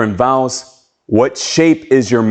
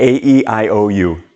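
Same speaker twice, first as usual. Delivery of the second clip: very slow robot voice-box voice with drawn-out vowels. Demonstrating the vowels one more time, robot voice box. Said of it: "That's the robot voice box".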